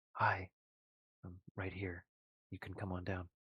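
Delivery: hushed, softly spoken voice. In a role-played scene, a character waves from below and calls out in a hushed voice. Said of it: "he says in kind of a hushed voice".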